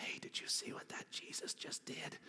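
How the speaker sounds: hushed, gossiping whispered aside. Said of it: "whispering to each other".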